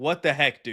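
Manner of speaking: put-on officer voice, acting out real anger. Retelling what the officer who pulled them over said; imitating a genuinely mad officer. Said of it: "he was like genuinely mad".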